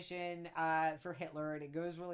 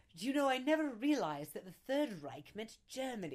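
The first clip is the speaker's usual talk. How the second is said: fake Mid-Atlantic accent, pitched up; 5 semitones higher than usual. Quoting a tacky musical director's line: Roger De Bris fake Mid-Atlantic accent. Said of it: "weird sort of fake, uh, Mid-Atlantic accent".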